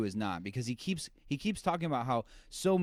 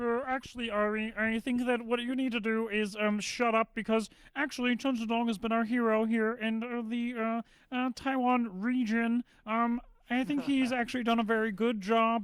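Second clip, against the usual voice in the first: put-on pundit lecturing voice, higher pitch; 11 semitones higher than usual. Doing a Jordan Peterson voice to lecture a friend named Ari: Jordan Peterson voice. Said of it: "I gotta do my Jordan Peterson voice".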